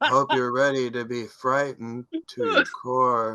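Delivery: high spooky host voice, "core" drawn out. Retelling how R L Stine opened special episodes: imitating R L Stine. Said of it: "R L Stine being like".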